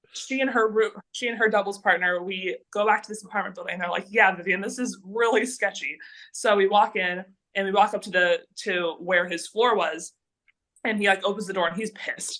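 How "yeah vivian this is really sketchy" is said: plain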